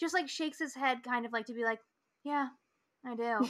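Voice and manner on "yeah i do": offhand, casual, nonchalant, matter-of-fact delivery. Retelling a scene where Terry answers a question: imitating Terry's nonchalant reply. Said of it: "very nonchalant".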